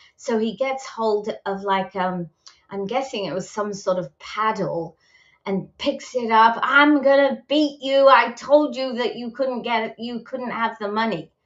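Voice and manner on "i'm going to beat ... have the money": mock furious raving rant, higher. Retelling what a man said as he picked up a paddle, imitating a raving-mad rant. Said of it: "he's like raving mad".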